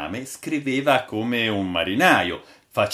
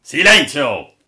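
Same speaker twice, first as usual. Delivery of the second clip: very loud, high, imperious, commanding tone; 5 semitones higher, 9 dB louder than usual. Narrator reading the captain silencing everyone, in an imperious tone. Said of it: "esclamò il capitano con tono imperioso".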